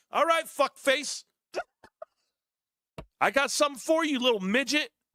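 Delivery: high-pitched, full-on angry ranting outburst. Reacting angrily to a critic's tweet about the stock: mad ranting. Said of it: "I think he's a little mad".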